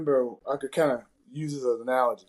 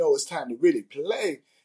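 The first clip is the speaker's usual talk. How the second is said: put-on light New York accent. Retelling a line a man repeated to the guys, in a New York accent. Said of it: "he repeated it in a New York accent again".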